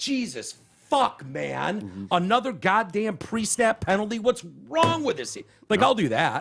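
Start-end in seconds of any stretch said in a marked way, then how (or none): 0.0-5.4 slow, drawn-out, exasperated, frustrated rant. Describing how they react to bad football plays, retelling yelling at the TV. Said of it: "I'll yell at certain plays like".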